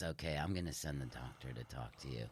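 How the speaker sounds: very hushed, quiet, sorrowful, sad delivery. Retelling what a nurse said after a scan: imitating a sad tone. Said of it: "Real, you know, sad".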